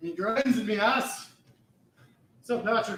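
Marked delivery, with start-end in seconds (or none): 0.0-1.3 put-on Scottish accent, yelling, higher pitch. Yelling at themself in a William Wallace type Scottish accent. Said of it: "yelling at myself in a Scottish William Wallace type accent".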